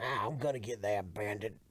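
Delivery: rough, very low, soft sheriff-style mutter. Riffing on a southern sheriff character chasing the bandit, rough Jackie Gleason sheriff voice. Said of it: "Jackie Gleason was a bit rougher".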